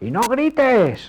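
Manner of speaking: high, loud, drawn-out shout, belted.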